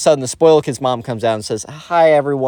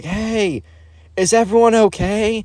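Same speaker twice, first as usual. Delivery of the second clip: mock high, long, drawn-out, far-carrying yell; 7 semitones higher than usual. Retelling a sudden call after a loud crash: imitating someone yelling. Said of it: "kind of like a yelling of".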